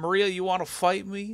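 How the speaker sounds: poor put-on southern drawl. Retelling a drunk woman challenging Maria to fight, in a shitty southern drawl. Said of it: "a shitty southern drawl".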